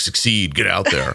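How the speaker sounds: mock, parodied bro podcaster voice. Joking about sounding like a bro podcast: mock bro podcast voice. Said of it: "like a bro podcast where I'm just like".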